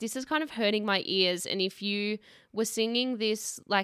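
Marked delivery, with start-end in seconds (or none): none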